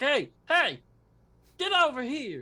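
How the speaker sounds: high-pitched, drawn-out calling voice. Voicing the guards calling a player over: guards calling out. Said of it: "And they're like".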